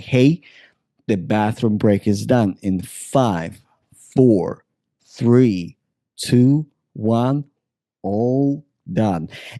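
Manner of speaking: slow, soothing, spellbinding hypnotic tone. Showing how to end a bathroom break with a countdown: hypnotic voice. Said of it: "the concept of hypnotic voice".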